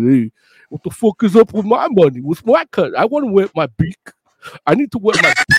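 put-on thick, slurred, punch-drunk mobster voice. Imagining a punch-drunk boxer as a mobster demanding his cut, mock-drunk slurred mobster voice. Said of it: "He talks a little slur, like he's drunk".

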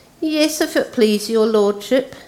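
high, wheedling, coaxing, servile tone. A slaver answers his lordship, in a wheedling voice. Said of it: "said in a wheedling kind of voice".

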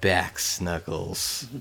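very soft, quiet, hushed. Retelling how a woman, waking in her tent, says this very softly. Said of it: "just very softly goes".

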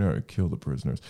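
low, hushed whisper. Retelling a character whispering to his droid, retelling a whisper. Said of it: "he whispers to his droid".

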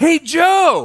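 mock very high, overjoyed, excited voice, name stretched out. Telling a joke where St. Peter greets a taxi driver at the pearly gates: acting out an excited greeting. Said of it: "he's all excited to see him".

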